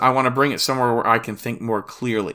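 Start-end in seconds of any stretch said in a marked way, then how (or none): none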